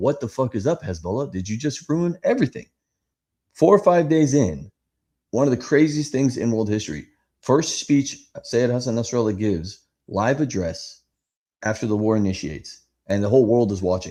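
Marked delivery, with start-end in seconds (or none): 0.0-2.7 mock fed-up, pissed-off jab, pitch rising at end. Retelling how people questioned a group's silence, imitating angry questioning. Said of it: "kinda pissed off and kinda questioning".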